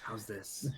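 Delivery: loud stage whisper. Speaking in character after being told to lower the voice: loud whisper. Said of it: "it's like a loud whisper".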